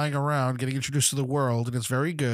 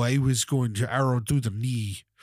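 terrible fake knockoff Nord accent. Quoting Skyrim characters: terrible knockoff Nord accent. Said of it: "has that same terrible knockoff Nord accent".

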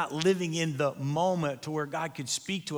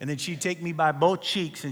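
plain

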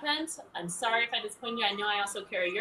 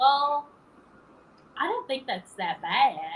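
little, sweet put-on southern accent; 3 semitones higher, 4 dB louder than usual. Retelling what the speaker's Nashville mom said on the phone, in a little Southern voice. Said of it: "She said in a little southern voice".

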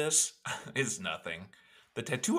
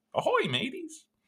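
very high, timid, wimpy pirate voice. Playing the pirate no one wants to hang out with, in a wimpy pirate voice. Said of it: "I'm the wimpy pirate that no one wants".

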